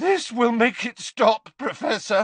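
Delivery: voice breaking on words. The speaker tells the professor while tipping potion into his mouth, voice cracking. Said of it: "his voice cracking".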